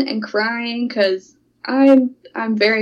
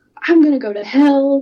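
acted soft, mild half-yell; 3 semitones higher than usual. Recounting talking to her, speaker retells her own yell. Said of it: "i'm yelling like".

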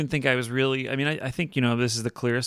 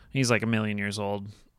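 usual speaking voice

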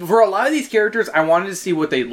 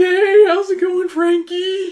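put-on weird teenage voice, higher; 12 semitones higher, 3 dB louder than usual. Answering what the character Hoodoo's voice sounds like: Hoodoo voice. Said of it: "What's his voice sound like?".

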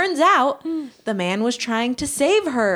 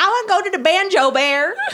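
put-on high little-kid voice with a Southern accent; 7 semitones higher, 4 dB louder than usual. Imagining the other speaker as a little kid, imitating little Kelly with a Southern accent. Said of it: "Why am I Southern?".

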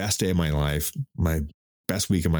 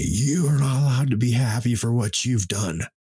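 high, furious, acted-out screaming; 7 semitones higher than usual. Retelling what the mother screamed at the speaker: retelling mother's scream. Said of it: "she screamed at me".

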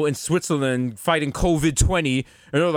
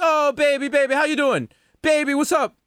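put-on very high cooing baby talk; 10 semitones higher than usual. Acting out greeting a newborn: cooing at a baby. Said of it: "you go and you be like".

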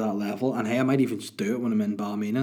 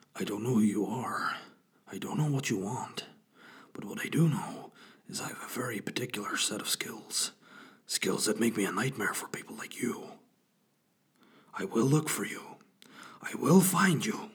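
hushed, breath-heavy near-whisper; 5 dB quieter than usual. Trying out an impression after asking if he can do it: Liam Neeson impression. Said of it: "can I do a good Liam Neeson".

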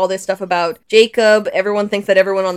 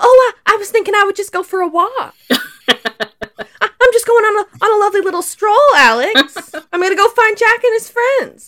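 put-on very high, old Southern belle voice; 13 semitones higher than usual. Recapping an episode, the speaker acts out Ben's reply to Alex as an old Southern belle. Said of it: "adorable old Southern Belle Ben".

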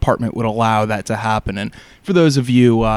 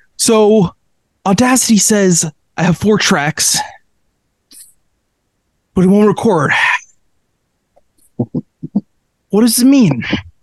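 put-on heavy-breathing angry voice, higher and louder; 9 semitones higher, 4 dB louder than usual. Complaining that the recording software won't record: Brian Windhorst impression. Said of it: "That's my Brian Windhorst impression".

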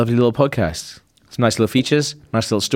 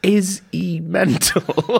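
slow, higher, bemused onlooker tone. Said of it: "it's like".

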